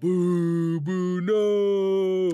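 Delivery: crowd booing. Voicing the crowd reacting to the announcement: crowd booing. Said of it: "you hear people go".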